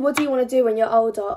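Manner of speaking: usual speaking voice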